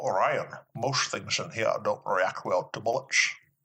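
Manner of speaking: put-on Russian accent, movie-actor style. Doing a Russian accent after being asked, in Sean Connery's Russian accent. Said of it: "Sean Connery's Russian accent".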